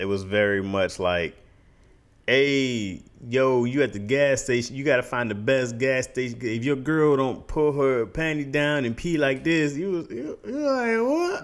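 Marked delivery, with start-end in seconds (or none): 2.3-11.4 put-on heavy Southern drawl, sounding drunk. Speaker describes a video to a co-host, mock-drunk southern t.i. impression. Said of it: "he sound drunk, but he's also you know super sou- southern".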